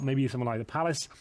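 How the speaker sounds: ordinary delivery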